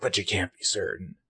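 hard-man gravelly, gruff rasp, kept hushed. Retelling a man's reply during a discussion, in a gravelly Batman voice. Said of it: "this like kind of gravelly Batman voice".

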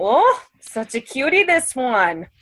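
put-on high-pitched, slow, grandma-style old woman voice.

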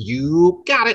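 high cartoon character voice. Quoting a catchphrase from the show's final episode, Badgie impression. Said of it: "That's a dead-on Badgie impression".

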